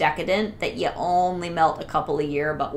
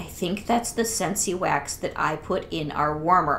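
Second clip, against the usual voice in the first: normal talking voice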